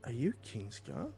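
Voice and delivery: whispering voice. Voicing a character's question to another character in a scene: whisper. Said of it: "in, like, a whisper".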